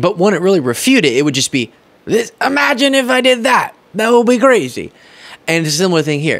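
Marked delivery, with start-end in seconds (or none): 2.1-4.9 aggrieved, put-upon, pitched-up, hard-done-by tone. Speaker acts out how a man would answer a story, mock-aggrieved tone. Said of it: "say it in a sort of aggrieved tone of voice".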